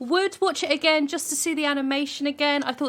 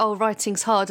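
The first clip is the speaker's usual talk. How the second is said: plain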